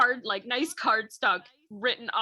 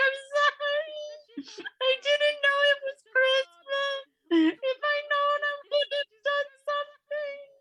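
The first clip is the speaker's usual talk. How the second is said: put-on very high little-girl voice, sobbing through words. Retelling what the little girl said while holding something out, imitating a little girl sobbing. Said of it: "she's just sobbing like the little girl she is".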